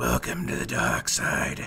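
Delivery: ominous, dark, rough villain voice. Showing the others how Jesse starts out, in Jesse's dark voice. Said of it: "starts out with the dark voice like".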